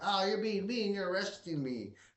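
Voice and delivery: wimpy, meek, whiny pushover voice. Mocking a man being arrested without resistance: imitating a wussified arrested man. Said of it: "They're so wussified".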